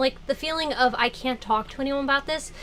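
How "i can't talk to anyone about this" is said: ordinary talk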